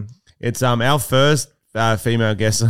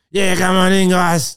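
pitched-up chain-smoker's voice; 8 semitones higher, 3 dB louder than usual. Retelling a visit to a psychic, the speaker voices her letting them in: imitating the psychic's voice. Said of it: "You do the voice a bit better than me".

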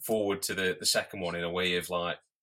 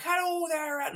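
put-on American accent, pitched very high. Retelling a phone call with an American man, attempted American accent. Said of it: "some American chap on the phone".

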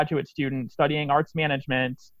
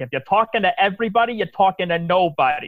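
put-on New York accent, higher; 5 semitones higher than usual. Speaker quoting Marie Forleo as she slips into it: Marie Forleo's New York accent. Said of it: "New York accent".

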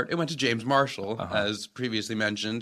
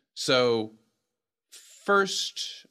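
ordinary delivery

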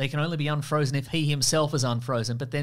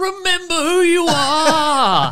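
shrill, booming, very slow, very high, loud dramatic scream; 14 semitones higher, 11 dB louder than usual. Acting out a superhero movie moment: imitating a scream. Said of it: "somebody would scream".

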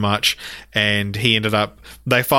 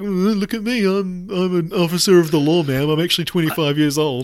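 put-on high little-kid cop voice; 8 semitones higher than usual. Describing the parody character Officer Doofy and his mustache: imitating Officer Doofy. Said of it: "he has his little mustache and he's like".

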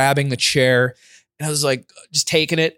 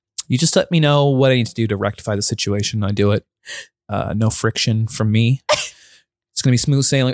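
put-on very formal speech, lower; 4 semitones lower than usual. Retelling an apology to the dental staff after a mistake: imitating own very formal speech. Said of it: "I got, like, very formal".

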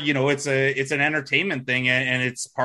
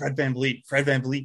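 whispering; 3 dB quieter than usual. Retelling a name said during Finals MVP ballot voting: retelling a whisper. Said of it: "I'm whispering".

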